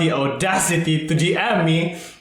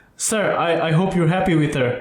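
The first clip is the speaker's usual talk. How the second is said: ordinary delivery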